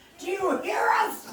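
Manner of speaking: loud high-pitched shouting.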